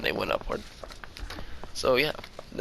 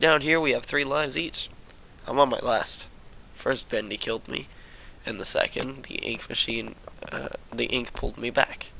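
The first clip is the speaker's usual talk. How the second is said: ordinary delivery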